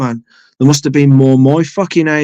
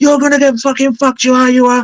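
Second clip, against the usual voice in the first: very high-pitched, furious, raging rant; 10 semitones higher than usual. Telling a story, the speaker quotes a man booting the door: imitating a man's rage. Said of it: "he goes in a rage".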